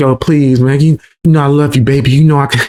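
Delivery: pleading, begging voice. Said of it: "he's over there begging like".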